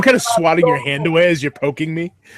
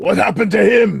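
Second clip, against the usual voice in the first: rough, creaky voice, words blurted out; 3 semitones higher than usual. Asking whoever is nearby about the bleeding knight: saying it too loudly. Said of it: "I kinda say too loudly".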